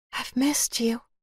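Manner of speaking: high, airy, breathy voice. Narrating a story, Emma says something to fill the silence with him, breathy voice. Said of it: "spoken in that breathy voice".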